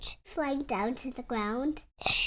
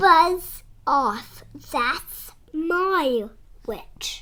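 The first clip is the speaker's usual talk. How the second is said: loud yowling, croaking, growling, shrieking monster voice, my drawn out; 3 semitones higher, 6 dB louder than usual. Narrator voices a creature from the ditch speaking to the dragon, growling, shrieking creature voice. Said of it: "a yowl, and a growl, and a croak, and a shriek".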